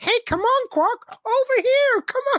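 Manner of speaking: very high, slow, clear calling voice. Retelling what a background extra shouts in the bar: imitating a clear female extra calling out. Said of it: "one really clear female voice going".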